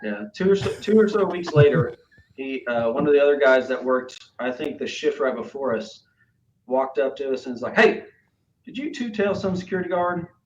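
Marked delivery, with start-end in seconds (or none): 7.8-10.3 mock East Texas accent, higher. Retelling what a coworker asked: imitating an Eastern Texas accent. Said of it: "he had a real, uh, Eastern Texas accent".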